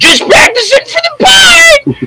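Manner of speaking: mock, shrill, very high, rising yell with one part drawn out. Retelling how a realtor yelled at him from an office, retelling a yell. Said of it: "he yells at me".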